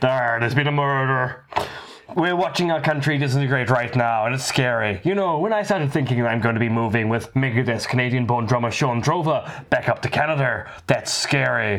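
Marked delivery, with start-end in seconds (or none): 0.0-1.4 Belfast accent impression. Remarking on how they sound, the speaker jokes in a Belfast detective accent. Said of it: "sound like a Belfast detective".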